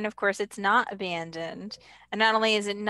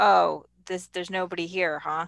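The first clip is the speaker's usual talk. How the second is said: put-on, very sarcastic delivery; 2 semitones lower than usual. Recapping a scene, quoting Mando after he kills four stormtroopers: mock-sarcastic. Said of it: "He says sort of very sarcastically".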